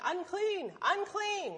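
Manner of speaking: screaming, high-pitched cry.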